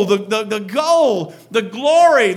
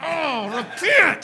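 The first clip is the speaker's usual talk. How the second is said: quiet, grudging words through clenched teeth; 4 semitones higher, 7 dB quieter than usual. Speaker retelling Jonah's story acts out his reluctant preaching, imitating him through gritted teeth. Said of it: "through gritted teeth".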